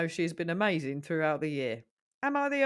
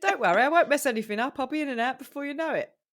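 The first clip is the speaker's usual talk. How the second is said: put-on Cockney comedian voice, higher and louder; 7 semitones higher, 4 dB louder than usual. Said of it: "a comedian called Mickey Flanagan who's very Cockney".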